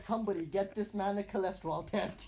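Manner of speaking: ordinary talk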